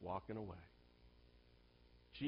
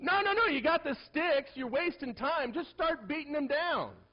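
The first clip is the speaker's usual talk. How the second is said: high, loud, encouraging yell. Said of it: "I go".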